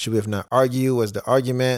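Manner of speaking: ordinary talk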